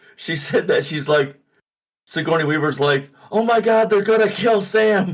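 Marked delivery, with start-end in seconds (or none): 3.3-5.2 mock sudden, raised, high-pitched shouted yell. Retelling a frightened character's line from the movie: imitating someone yelling. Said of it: "she, like, yelled it".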